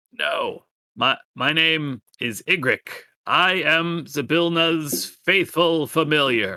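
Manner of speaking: high-pitched, slow, croaking, little voice. A toad familiar introduces itself to newcomers in a tower, croaking little Igric voice. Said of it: "in a very croaking little voice".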